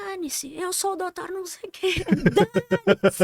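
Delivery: very high, patient, repeated yelling, acted out. Retelling what a confused patient kept saying: imitating a patient yelling. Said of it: "ele continuava gritando isso".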